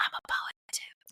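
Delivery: soft, breathy, barely-voiced whisper. Retelling what a coffee shop worker said across the counter: imitating a whisper. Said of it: "he, like, whispered to me across the counter".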